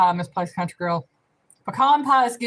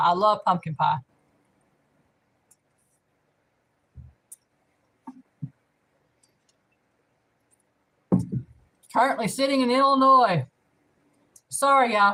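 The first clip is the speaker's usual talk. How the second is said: speaking with full mouth; 2 semitones higher than usual. Answering a trivia question about state pies, talking with cake in mouth. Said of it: "I got cake in my mouth".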